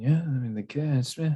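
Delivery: hushed whisper. Voicing a character who leans over to his companion: whispering. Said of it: "and sort of starts whispering".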